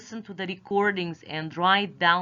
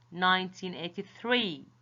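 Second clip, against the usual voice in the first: nineteen eighty-three, stress on three. Lesson on reading years aloud, stress on final three. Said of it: "You stress the last number".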